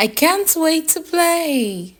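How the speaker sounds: excited, very high, eager voice, drawn-out "play". Speaker reads example sentences to show how emotions are expressed, eager excited voice. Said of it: "Take note of how I express emotions".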